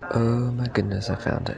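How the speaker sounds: hushed whisper. Finding a map in a quiet reading room: whispering. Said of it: "whispering because it's a quiet reading room".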